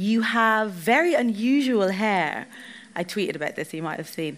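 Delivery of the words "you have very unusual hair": put-on heavy Polish accent, very slow and drawn out. Retelling what a woman working in an airport bar said: strong polish accent. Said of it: "she said to me in a strong Polish accent".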